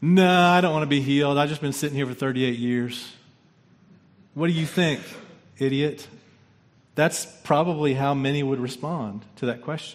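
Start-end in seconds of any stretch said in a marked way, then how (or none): 0.0-6.1 put-on, biting, sarcastic tone. Acting out how a man might answer Jesus: acting out a sarcastic reply. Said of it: "to answer maybe with sarcasm".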